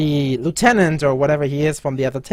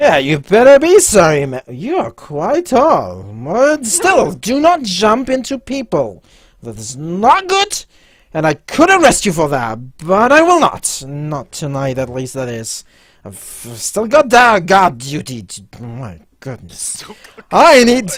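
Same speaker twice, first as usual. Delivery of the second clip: put-on tipsy, drunk-sounding character voice; 3 semitones higher, 4 dB louder than usual. Voicing a drunk lieutenant to a tall player character who bumped into him, drunk guard lieutenant. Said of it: "you notice that the lieutenant or whatever he is from the other table, that seems to be quite drunk, / you notice that the lieutenant or whatever he is from the other table, that seems to be quite dru".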